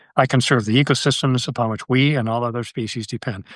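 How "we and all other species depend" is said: ordinary talk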